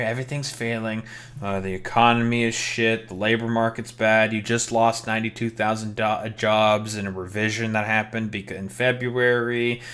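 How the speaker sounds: usual speaking voice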